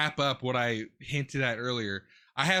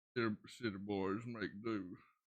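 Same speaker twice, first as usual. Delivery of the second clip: put-on country accent, lower and quieter; 5 semitones lower, 13 dB quieter than usual. Riffing on what he probably did next, country voice. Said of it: "Why am I doing the country voice".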